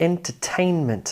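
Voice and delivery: entertainment, main stress on third syllable tain. Teaching primary and secondary stress, main stress on tain in entertainment. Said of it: "Some stress on the first syllable, most of the stress on the third syllable".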